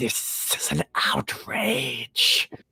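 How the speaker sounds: whispered, very slow and drawn out. Narrator voicing a character who then leaves out the door; whispered. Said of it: "she whispers".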